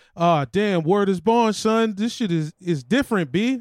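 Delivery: loud, slow, streetwise delivery. Doing an impression of Kemba Walker after his first playoff appearance: Kemba Walker impression. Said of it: "here's my Kemba Walker impression".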